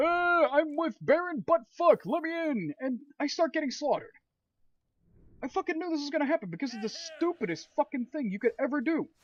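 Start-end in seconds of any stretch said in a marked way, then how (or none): 0.0-2.7 mock slow, loud, drawn-out shouting. Retelling what his game character shouted at a cave: imitating his character yelling. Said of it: "My guy just starts yelling out".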